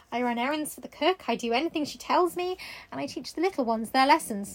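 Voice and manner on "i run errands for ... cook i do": usual speaking voice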